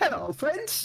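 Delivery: very high, cheerful, happy voice. Introducing Albert from the cart as he waves, Albert's happy greeting. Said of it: "He just sort of waves quite happily".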